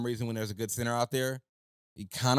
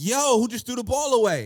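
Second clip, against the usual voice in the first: shrill, swooping, very high, loud yell; 11 semitones higher, 8 dB louder than usual. Retelling watching the game on TV: retelling screaming at the TV. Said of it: "I was screaming at the T V like".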